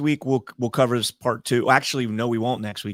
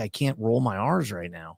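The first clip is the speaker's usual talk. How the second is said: ordinary delivery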